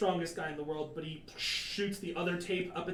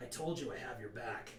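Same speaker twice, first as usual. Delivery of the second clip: very quiet, very low, hushed half-whisper; 7 semitones lower, 10 dB quieter than usual. The narrator voices Shoji speaking to the player through a hand-mouth, half-whispering as Shoji. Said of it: "Shoji just whisper".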